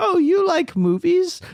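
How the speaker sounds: put-on old lady voice. Retelling what mom said when handing over the bingo cards: imitating mom as an old lady. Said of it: "trying to make her sound more like a old lady".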